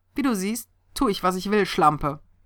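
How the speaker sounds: derisive, jeering, mocking, taunting tone. A man speaks to a woman after grabbing her: mocking. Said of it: "verhöhnte er sie".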